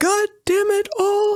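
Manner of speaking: high-pitched whistly voice. Imitating the Daniel Day-Lewis Lincoln, high-pitched whistly voice. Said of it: "the Daniel Day-Lewis one is like".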